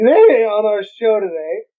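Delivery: earnest, slow college radio dj delivery. Mimicking a college radio host behind the mic, college radio voice. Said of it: "that college radio voice".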